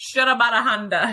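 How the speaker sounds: rushed, words blended together. Explaining a joke, the speaker says the phrase super fast, run together. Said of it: "You just say it super fast together".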